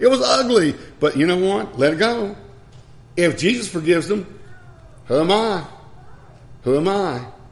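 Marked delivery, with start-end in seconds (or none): 0.0-0.7 high, loud, aggrieved, complaining tone. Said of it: "And you're thinking".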